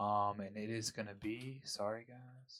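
slow, drawn-out dramatic pause. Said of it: "Pause for dramatic effect".

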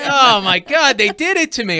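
high, loud shouting. Retelling a reaction to the baseball game on TV: imitating own yelling. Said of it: "I'm yelling at the T V again".

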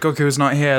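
normal talking voice

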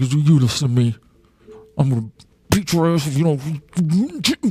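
menacing, spoken through gritted, clenched teeth. Acting out getting in a little jerk's face outside, talking through clenched teeth. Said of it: "I get that voice where I talk with my teeth".

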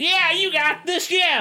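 acted, very high, overdone, over-ecstatic celebration whoop. Retelling a wrestler's celebration in the ring: imitating over-ecstatic celebrating. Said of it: "the over ecstatic".

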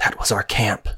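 hushed voice. Narrator voicing a character reacting to close thunder, very quiet voice. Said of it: "You hear Akraya say very quietly".

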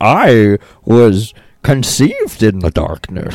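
muffled masked-villain voice. Joking with cohosts about talking into a mic, doing a Bane voice. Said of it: "I used to have a good Bane voice".

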